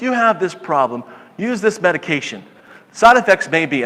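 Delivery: ordinary delivery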